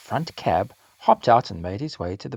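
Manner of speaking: plain reading voice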